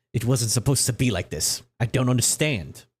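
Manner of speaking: angry, pissed-off oracle voice in a man's voice. Voicing an oracle speaking through a man's body: angry oracle in a man's voice. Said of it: "she's pissed in this guy's voice".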